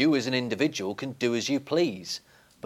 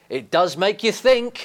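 delighted outrage, much higher pitch; 8 semitones higher, 4 dB louder than usual. A man reflecting on a stranger's apology, in a delighted, outraged voice. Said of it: "says the man with a delighted, outraged voice".

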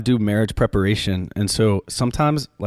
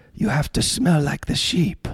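badly done, pitched-up put-on Argentine accent; 6 semitones higher than usual. Quote Pope Francis to listeners, as Pope Francis in a bad Argentine accent. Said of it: "that was a bad Argentine accent".

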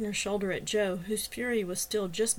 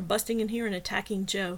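plain reading voice

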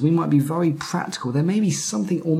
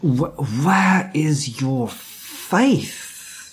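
frustrated, weary, exasperated, very slow delivery. Showing how people often read a Bible story, frustrated Jesus. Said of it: "like Jesus is just really frustrated".

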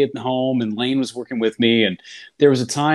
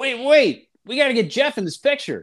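mock, high-pitched holler; 12 semitones higher than usual. Retelling a group photo during a broadcast, imitating Robin Yount yelling. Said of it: "And Robin yells".

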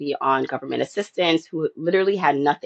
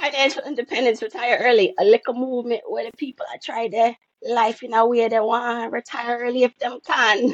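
put-on higher-pitched voice in Jamaican patois accent.

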